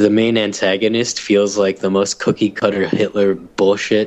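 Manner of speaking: usual speaking voice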